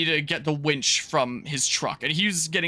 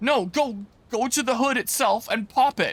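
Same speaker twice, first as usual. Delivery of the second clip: put-on high-pitched, insistent yell; 7 semitones higher than usual. Recounting how a man yelled at the speaker: imitating someone yelling. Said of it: "he starts yelling at me like".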